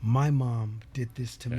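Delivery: ordinary talk, nothing marked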